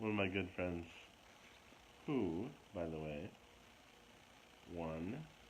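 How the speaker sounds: very slow, stretched-out, deliberate word-by-word pace. Introducing one of their good friends, talking very slow. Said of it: "You're talking very slow".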